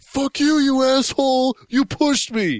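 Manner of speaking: furious screaming, pitched very high. Retelling a bus passenger turning on the man behind him, retelling a man screaming. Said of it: "starts screaming at him and saying like".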